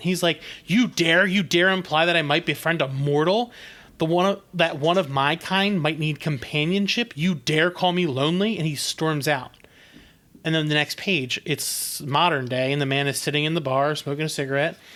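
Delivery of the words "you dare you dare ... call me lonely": ordinary talk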